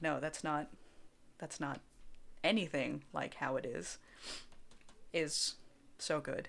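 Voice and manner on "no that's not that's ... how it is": deadpan, flat, dry, lower and quieter. Describing a favorite kind of reply, someone cutting in: deadpan. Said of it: "someone just deadpan wa- being like".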